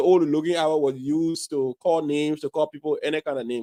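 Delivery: ordinary talk, nothing marked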